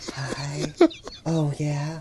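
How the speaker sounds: soft, breathy, barely spoken voice. Retelling how a woman at the dance greeted them: imitating a real soft voice. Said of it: "not even talking, like, full breath".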